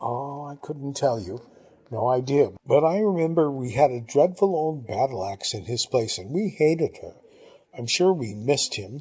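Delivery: ordinary delivery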